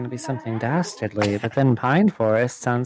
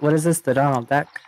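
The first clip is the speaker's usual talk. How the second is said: ordinary delivery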